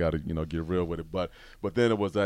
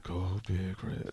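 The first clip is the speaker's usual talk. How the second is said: secretive, barely voiced, whispered mutter under the breath; 6 dB quieter than usual. Retelling secretly rooting for a team near dad: imitating muttering under breath. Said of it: "under my breath".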